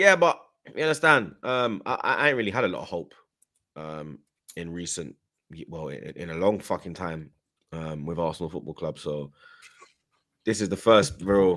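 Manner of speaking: very low, soft, thoroughly disappointed tone. Speaker responding to a fan's message, disappointed. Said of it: "The way you said that with just so much disappointment".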